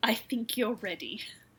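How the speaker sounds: play-acted, darkly ominous, foreboding delivery. Retelling what Buck tells Erlen, very ominously: ominous Buck quote. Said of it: "Then very ominously".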